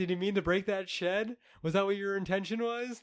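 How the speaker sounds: acted, pointed, needling tone dripping with sarcasm. Retelling a neighbor's questions to a tree cutter: imitating a sarcastic neighbor. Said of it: "sarcastically asking him".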